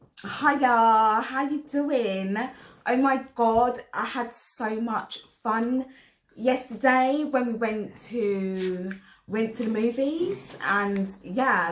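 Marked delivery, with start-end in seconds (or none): 0.2-10.6 rough, slow, overly drawn-out put-on Essex accent. Trying an accent game round, doing an Essex accent.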